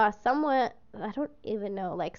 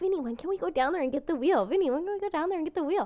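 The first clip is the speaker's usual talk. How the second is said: eager, bubbling-over, high, rushed excitement; 6 semitones higher than usual. Quoting their own past words to someone, acting out past excitement. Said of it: "I remember I was like super excited".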